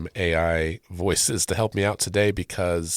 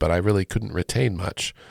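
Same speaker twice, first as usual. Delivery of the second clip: ordinary talk, nothing marked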